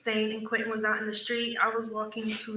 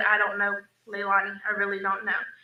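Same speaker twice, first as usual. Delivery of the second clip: usual speaking voice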